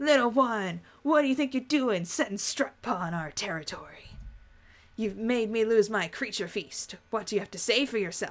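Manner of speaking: low, deep, rumbling voice. A storyteller sets the scene and gets into character, in a low rumbly voice. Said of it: "her voice gets low and rumbly".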